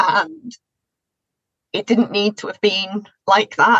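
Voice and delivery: emotional, upset voice on the verge of crying. Talking about a time of being really unwell, getting upset, close to tears. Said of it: "I'm gonna get a bit upset now".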